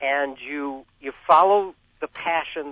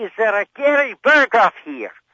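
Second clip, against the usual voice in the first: put-on hollered loudly in a thick, broad Scottish accent; 7 semitones higher, 6 dB louder than usual. Retelling how a blind man hollered into the room: imitating Joel Schumann, Scottish accent. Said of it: "He spoke with a thick Scottish accent, and he hollered out".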